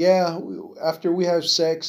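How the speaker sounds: mock casual, calm, nonchalant, matter-of-fact tone. Retelling what a little girl said: imitating a calm, nonchalant tone. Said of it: "all, like, calm and nonchalant".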